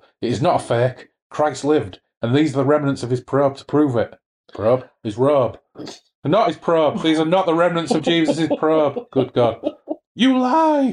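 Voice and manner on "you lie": very high-pitched screeching shriek. Narrator reads a character shrieking at the storyteller holding out the relic, shrieking. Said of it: "shrieked Adramelech".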